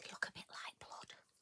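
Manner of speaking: whispered, very quiet, almost inaudible. Quick aside to viewers, whispered. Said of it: "I did whisper that".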